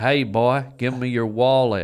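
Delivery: put-on Southern accent. Joking about being robbed in Mississippi, in a put-on Southern accent. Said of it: "the southern accent is cute".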